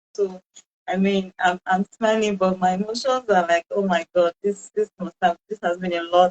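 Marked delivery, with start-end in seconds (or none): none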